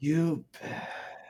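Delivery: drained, lifeless, breathy whisper. Trying the line as Cloud with the bet drained out: Cloud impression, drained. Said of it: "the bet has to just, like, drain out of it".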